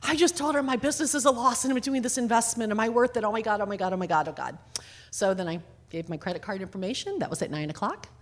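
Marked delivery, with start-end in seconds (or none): 0.0-4.6 breathless, hyperventilating, panicked, freaked-out rambling. Telling listeners about signing a contract, retelling freaking out. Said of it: "I'm hyperventilating. I'm freaking out".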